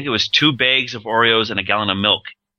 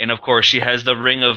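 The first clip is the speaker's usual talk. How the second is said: ordinary delivery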